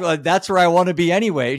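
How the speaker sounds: very high sarcastic tone. Retelling a 19-year-old's reply, retelling a sarcastic remark. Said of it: "He's being sarcastic".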